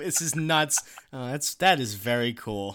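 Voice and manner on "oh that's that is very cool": sarcastic mock enthusiasm, lower. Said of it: "that's sarcastic".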